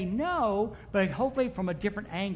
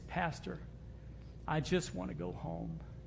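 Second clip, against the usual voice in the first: faint, feeble, very weak and very hushed voice; 3 semitones lower, 11 dB quieter than usual. A pastor holding a person's hand retells their words, imitating a very weak voice. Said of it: "says in a very weak voice".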